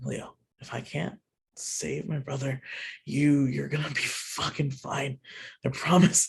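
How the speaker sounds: muttering quietly. Voicing a character gripping his brother during battle: under his breath. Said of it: "under his breath".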